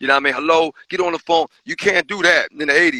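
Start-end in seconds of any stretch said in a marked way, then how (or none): 0.3-1.5 acted tough-guy, hard-man manner. Contrasting polite phone calls with the wrong way to call: tough guy on the phone. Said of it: "You don't want to be on the tough guy stuff".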